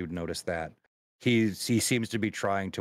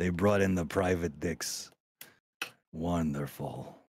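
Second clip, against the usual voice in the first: chuckling quietly under breath while speaking. Playing a character greeting newly arrived private detectives, chuckling under his breath. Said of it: "Rocco just starts chuckling a little bit under his breath".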